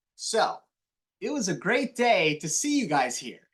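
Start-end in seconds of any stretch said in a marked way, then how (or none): 1.2-3.3 sunny, bright delivery with a smile. Showing how smiling while speaking changes the sound: smiling, bright voice. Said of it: "You can tell that my words are brighter".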